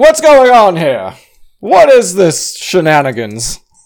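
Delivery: very high, shrill, swooping nonstop screaming. Player's character aggressively pushes into the front of the crowd, screaming. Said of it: "while like screaming the whole time".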